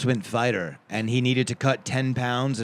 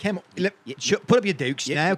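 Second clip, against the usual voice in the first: bad fake Irish accent, higher-pitched; 6 semitones higher than usual. Joking about having a classic fighting stance: put-on fighting Irishman accent. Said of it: "I'm like a fighting Irishman".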